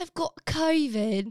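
put-on British accent. Trying accents on one phrase, asked to do British, British accent. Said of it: "now do like British".

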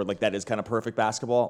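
ordinary delivery

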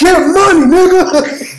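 very high-pitched yell at the top of the lungs. Retelling a video where someone yelled out of nowhere: imitating someone yelling. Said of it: "he just yelled at the top of his lungs".

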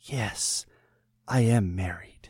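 hushed, very slow, drawn-out half-whisper. Reading a story aloud, a character's parting line: half-whispering. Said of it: "she whispered".

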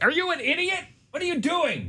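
mock very high, shrill, exasperated yell. Imagining what the dispatcher wanted to say to the caller: imitating someone yelling. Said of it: "she wanted to probably yell at the guy".

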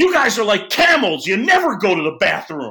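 sudden, loud, high blurted outburst. Retelling how a colleague, caught out live on air, blurts out a line: imitating Rossi blurting out. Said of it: "he just blurts out".

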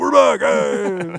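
very loud, hard, aggressive delivery. Showing how not to open after a break: hard, aggressive intro. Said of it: "come in all hard and aggressive".

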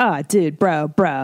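put-on slow, drawn-out Valley Girl delivery. Retelling talking with old friends from the Valley: Valley Girl talk. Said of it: "I still talk like a Valley Girl".

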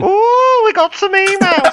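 very high-pitched announcer voice. Imitating the other speaker's email intro on his show: imitating a friend's Ricky Gervais-style intro. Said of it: "where you're going".

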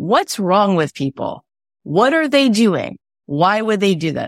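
dry, sardonic, sarcastic disbelief. Asking the audience why people pay more for brands: sarcastic. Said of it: "I'm being sarcastic to say what's wrong with them".

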